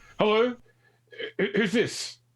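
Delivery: very high, stressed-out, strained voice. Answering a general radio call from another ship: stressed voice. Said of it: "a particularly sort of stressed voice go".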